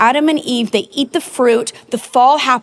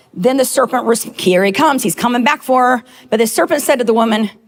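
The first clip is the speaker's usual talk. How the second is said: ordinary talk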